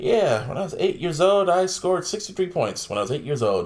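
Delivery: ordinary talk, nothing marked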